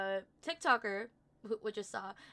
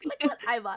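put-on thrilled, excited, raised voice; 7 dB louder than usual. Retelling someone showing what she bought: imitating someone excited. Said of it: "she was so excited to show us".

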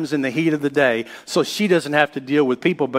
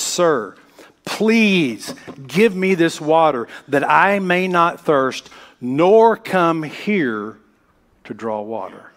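slow, desperate, pleading delivery. Retelling the woman's words to the man at the well, imitating a desperate plea. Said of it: "picture the desperation in her voice".

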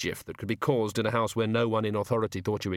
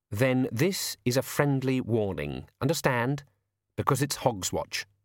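usual speaking voice

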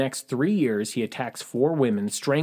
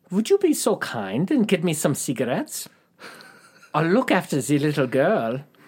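terrible, bad, put-on German accent; 4 semitones higher than usual. Retelling a man's request to Louise, the speaker retries a terrible German accent. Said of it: "I'm going to try that again".

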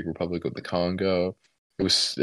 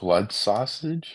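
surprised, caught-off-guard voice; 4 semitones higher than usual. Reacting to the other speaker bringing up a food: surprised. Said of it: "Why'd you sound so surprised then?".

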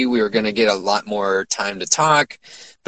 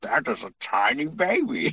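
soft, slow, gentle put-on voice; 3 semitones higher, 7 dB quieter than usual. Retelling how he turned his head and looked over at a newborn, in a Tim Curry voice. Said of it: "in his Tim Curry voice".

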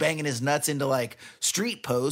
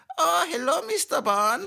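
very high-pitched German accent; 13 semitones higher than usual. Asked about a good german accent, the speaker tries a high-pitched german accent. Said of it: "I always want to do that really high pitch".

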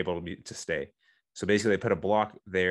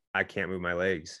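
usual speaking voice

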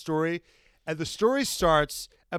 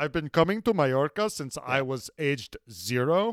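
put-on Spanish accent, much lower pitch; 4 semitones lower than usual. Quoting a man's line, in a spanish accent. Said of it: "it's like with a Spanish accent".

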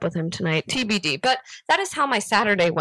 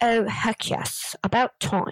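put-on leisurely British accent, spoken very slowly; 3 dB quieter than usual. Retelling a british man's reply to the speaker's greeting, the speaker uses a british accent. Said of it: "I need to do it in a British accent".

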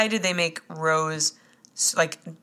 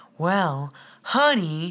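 put-on soft, whispery, soothing voice. Mocking how Kevin speaks like soothing a baby: imitating Kevin's soothing whisper. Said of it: "and it's like whispering".

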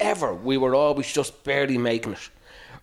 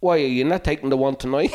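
ordinary talk, nothing marked

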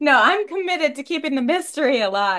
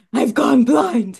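brooding superhero voice; 4 dB louder than usual. Retelling a scene where he can't see because of his mask; Batman voice. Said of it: "but in the Batman voice".

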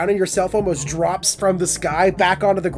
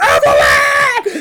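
wild, frantic, freaked-out, high-pitched yelling; 11 semitones higher, 8 dB louder than usual. Retelling how a guy cracking beers on his chest yelled at evelyn: retelling a freaked-out shout. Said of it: "Just like freaking the fuck out".

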